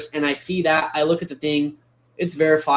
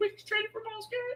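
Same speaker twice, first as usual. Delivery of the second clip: very high, rushed, under the breath; 12 dB quieter than usual. Retelling hearing news of a trade: retelling own Mickey Mouse voice. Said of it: "almost in, like, a Mickey Mouse voice".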